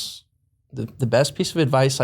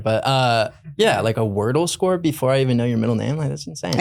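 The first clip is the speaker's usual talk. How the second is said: ordinary talk, nothing marked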